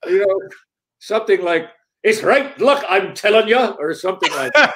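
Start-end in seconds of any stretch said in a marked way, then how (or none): 2.0-3.6 bad, horrible put-on Irish accent, pitched up. Demonstrating an accent from an early stage role when asked: horrible Irish accent. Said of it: "sporting a horrible Irish accent".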